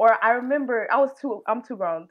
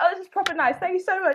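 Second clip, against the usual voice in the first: put-on British accent, pitched up; 10 semitones higher than usual. Retelling thanking the rental staff after getting the car: put-on British accent. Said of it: "that was me out of character".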